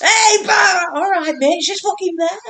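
mock, loud, high-pitched screaming yell. Recalling a film's kitchen scene, the speaker imitates a man screaming at a woman. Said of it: "And he's screaming at her".

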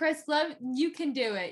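gentle, coaxing tone. Speaker retells what she told Chris while he was yelling, mock-sweet encouragement. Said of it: "I was being so nice".

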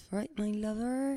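Somerset accent. Asked for a little tease of the accent, the speaker does a Somerset accent. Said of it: "do a little tease of the accent".

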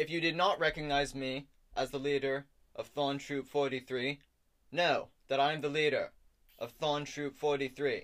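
loud, high-pitched proclaiming tone. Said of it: "can you wait until he finishes his monologue".

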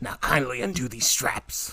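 breathy, whispered, possessed, demonic voice. Doing a bit with a friend, the speaker talks as possessed Regan. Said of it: "the voice for possessed Reagan in The Exorcist".

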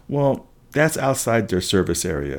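ordinary delivery

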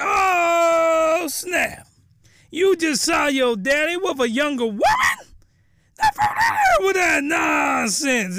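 put-on very high little-boy voice, swooping and rapid. Recapping a show scene, the speaker reacts to a character, voice going really high. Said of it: "my voice got real high".

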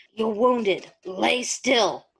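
growling, snarling wolf-like beast voice. Reading a story aloud, the narrator voices the wolf's line in the wolf's voice. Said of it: "now for the wolf's voice".

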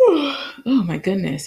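talking through a yawn. Mid-sentence, the speaker is overtaken by a yawn, yawning. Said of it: "Sorry for the yawn".

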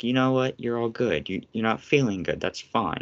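plain

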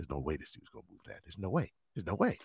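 very quiet, low, hushed half-whisper. Retelling an onlooker doubting the speaker would move that, imitating someone half-whispering. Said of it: "I can hear him whispering".

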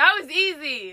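mild half-screamed little yelled outburst. Commenting after guessing a phrase in a game: screaming. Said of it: "You're, like, screaming".

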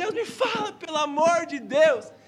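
loud, high, drawn-out anguished cry. Recalling her own desperate prayer to god, retelling an anguished shouted plea. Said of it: "Eu estava morrendo de angústia".

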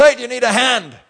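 high, loud, shouted call.

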